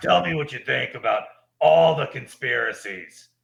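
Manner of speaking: put-on conspiracy show host voice. Imagining a guest on the pod about conspiracies, Alex Jones impression. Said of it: "That's my Alex Jones impression".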